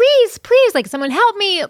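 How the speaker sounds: mock shrill, very high-pitched girl's scream. Retelling hearing a bottle break outside, then imitating a girl screaming. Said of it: "a girl like screaming like".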